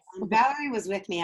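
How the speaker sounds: ordinary delivery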